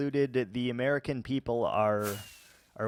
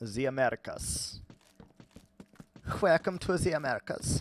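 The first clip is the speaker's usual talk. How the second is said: put-on German accent on English; 2 semitones higher than usual. Doing a bit and asking listeners to rate it, in a German accent. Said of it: "Rate my German accent".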